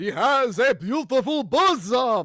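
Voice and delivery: campy vampire voice, high and slow, words dragged. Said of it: "in your worst Count Chocula voice".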